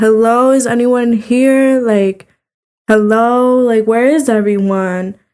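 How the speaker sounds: scaled-down calling out. Retelling going into an empty building, imitating screaming for people. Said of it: "I'm just like screaming for people".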